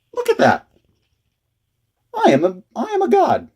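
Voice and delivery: very high, slow, drawn-out put-on voice. Showing off the figure that just landed on its feet, in a really high-pitched voice. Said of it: "my voice is really high pitched right now".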